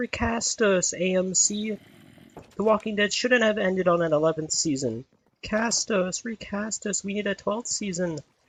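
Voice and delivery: very high, shrill zombie wailing scream. While playing Minecraft, he voices the zombies screaming in his ear: imitating screaming Minecraft zombies. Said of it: "They're screaming like".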